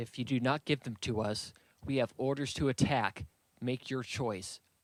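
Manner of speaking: ordinary delivery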